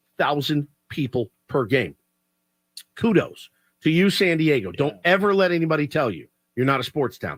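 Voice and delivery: ordinary talk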